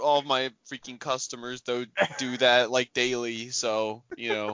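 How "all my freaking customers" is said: plain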